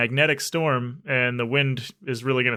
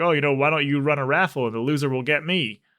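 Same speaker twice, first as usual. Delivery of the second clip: put-on sarcastic tone; 2 semitones higher than usual. Speaker retells a character's line on her way out, retelling a sarcastic quip. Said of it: "sarcastically is like".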